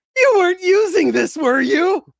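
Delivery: very high, loud, grin-filled squeaky voice. Voicing a character who pops up holding a butcher knife: grinning Badgie voice. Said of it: "with a big grin on his face and goes".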